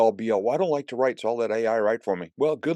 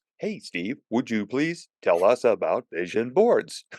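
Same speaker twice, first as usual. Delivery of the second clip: put-on artificial, synthetic, computer-sounding voice. Repeating the earlier question to Steve as if it were an AI-generated voice. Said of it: "may as well sound like an A I generated voice".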